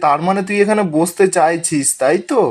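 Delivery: ordinary delivery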